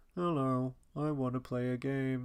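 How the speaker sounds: synthetic, robotic, AI-like puppet voice. Retelling how the film's puppet sounds: imitating an AI-like puppet voice. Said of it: "it's almost like an A I voice".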